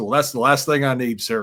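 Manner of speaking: plain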